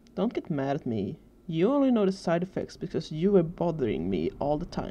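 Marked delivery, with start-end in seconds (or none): none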